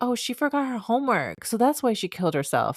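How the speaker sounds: very cheerful, bright, sing-song tone. Recounting a manga scene, speaker quotes a character in a mock-cheerful tone. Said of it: "in the most cheerful tone".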